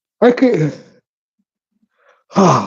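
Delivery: words stretched out, spoken through a yawn. Talking while carving wood, yawning mid-sentence. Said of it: "I'm yawning so much".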